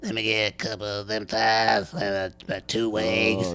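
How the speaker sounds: slow, mechanical electrolarynx voice-box speech. Retelling a man ordering fried chicken at a fuel center: imitating a voice box voice. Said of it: "this guy with, like, a voice box is like".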